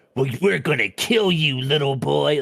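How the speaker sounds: stock cartoon villain voice with menace. Imagining how a typical movie would play the scene: cartoonish villain voice. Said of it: "cartoonish villain shit".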